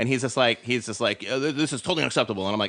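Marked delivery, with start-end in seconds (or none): 1.3-2.4 mock pissed-off, angry, stumbling outburst. Retelling a sales rep's reaction to being told to leave: imitating an angry man. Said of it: "the guy was fucking pissed".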